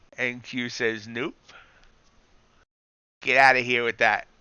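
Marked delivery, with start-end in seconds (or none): 1.1-4.2 put-on New York accent. Voicing a refusal while complaining about a login, in a New York accent. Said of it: "Not sure why I got the New York accent".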